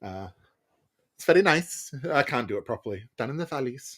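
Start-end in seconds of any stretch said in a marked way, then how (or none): 3.2-4.0 attempted soft Welsh accent. Discussing accents they like, trying a short line in a welsh accent. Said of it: "the Welsh accent is can be pretty fun".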